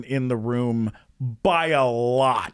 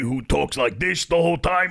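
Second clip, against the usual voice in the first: put-on New York-accented polar bear voice. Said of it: "like a kind of a New York, like, Joey Diaz kind of thing".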